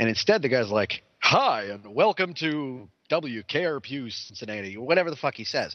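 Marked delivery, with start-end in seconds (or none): 1.2-4.8 very slow, drawn-out classic radio announcer voice. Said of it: "the most perfect classic radio announcer voice".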